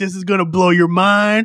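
thrilled, stoked, excited, hyped build-up. Retelling a character's line to a security guard: imitating someone stoked. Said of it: "he's so stoked".

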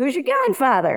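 put-on heavy Boston accent. Retelling what a man asked on first meeting: thick boston accent. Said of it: "in a very thick accent, Boston accent".

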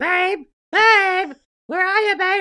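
high, very loud, shrill calling yell. Recalling calling out to her meditating husband, retelling a scream. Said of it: "Is he really screaming at me".

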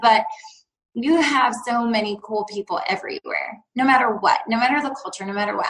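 plain

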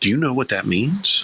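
mock whispering voice. Retelling what a manager whispered after pulling him close: imitating someone whispering. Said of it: "he whispered to me".

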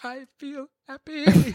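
sorrowful, downcast voice, pitched high. Suggesting what to say after a truly terrible day, in a sad voice. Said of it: "saying I feel happy in that sad voice".

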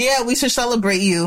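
ordinary talk

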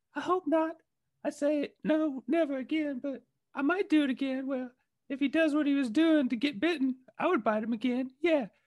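very high, badly done put-on voice. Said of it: "That sounded more like [name] than [name]".

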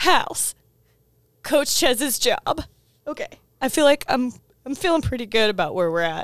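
fast, tearful speech through tears. Character reviewing the group's plan after being fired, crying while talking. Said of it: "I'm crying".

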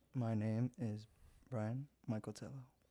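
fake, put-on seductive, sexy voice. Podcast guest introducing himself on air, in a put-on sexy voice. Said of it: "trying to do a real sexy voice there".

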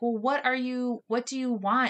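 usual speaking voice

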